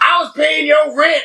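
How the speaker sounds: mock crying grown man voice, very high, sobbing. Speaker retells a movie argument heard with subtitles; imitating a grown man crying. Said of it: "like a grown man just crying".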